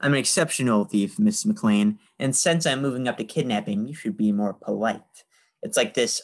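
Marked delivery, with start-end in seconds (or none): none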